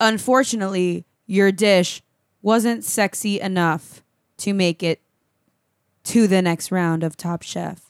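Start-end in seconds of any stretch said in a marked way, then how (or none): 1.3-7.8 mock flat robotic host voice, lower. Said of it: "it was robots".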